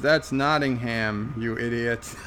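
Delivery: normal talking voice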